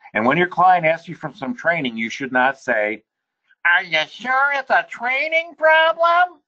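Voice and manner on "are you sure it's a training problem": very high, whiny, complaining voice. Quoting a conference speaker on what not to ask clients, mock-whiny voice. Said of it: "He said it in a whiny voice like that".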